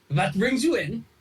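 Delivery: tiny, high-pitched elf voice. Voicing a tiny high elf shopkeeper greeting customers: high elf shopkeeper voice. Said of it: "he'll say".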